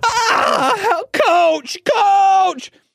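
mock piercing, very high-pitched, shrill scream. Retelling a prank, voicing Zach tied up in a tall locker; imitating Zach screaming. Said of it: "he's screaming inside of this tall locker".

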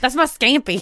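imitated country accent. Retelling what a traveler said at airport security: imitating a country woman. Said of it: "She was real country".

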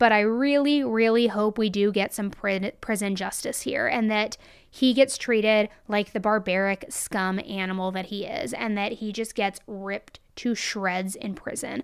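plain

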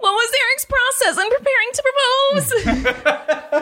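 very high, silly, stupid-sounding put-on voice. Guessing aloud how a certain woman would talk, stupid put-on voice. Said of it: "That's how I think that person would talk".

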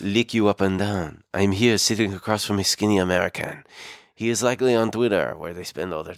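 put-on male French accent. Imagining what a man is saying to his wife, in a nice French accent. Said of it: "he had a really nice French accent".

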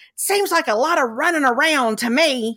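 stage whisper projected to carry. Retelling what a man in the audience said to a lady: imitating a very loud whisper. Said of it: "in a very loud whisper".

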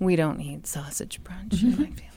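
sorrowful tone. Showing how a line about the family should always be said, sad voice. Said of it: "That should always be said with a sad voice".

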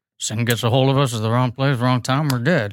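put-on movie cowboy voice. Retelling a scene from the film, doing a Heath Ledger impression. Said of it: "that's a really good impression".

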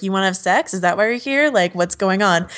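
normal talking voice

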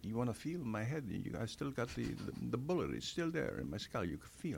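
put-on Italian accent. Recounting what a man said backstage after the film, in an italian accent. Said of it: "had an Italian accent".

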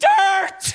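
sudden, very high-pitched yell blurted out at once.

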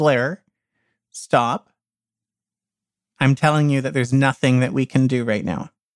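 ordinary talk

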